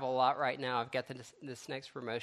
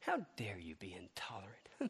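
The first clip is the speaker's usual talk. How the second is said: very quiet, hushed, patronizing, condescending sing-song; 5 semitones lower, 9 dB quieter than usual. Quoting a lady who snapped at the speaker, mimicking a condescending tone. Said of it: "it was the most condescending tone".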